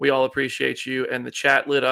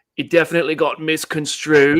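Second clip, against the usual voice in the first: loud, bad Australian accent, raised; 3 semitones higher, 6 dB louder than usual. Quoting Chris Hemsworth's interview comment, in a bad Australian accent. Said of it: "go Australian".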